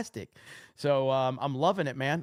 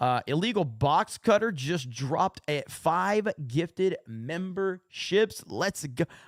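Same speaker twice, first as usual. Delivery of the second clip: ordinary talk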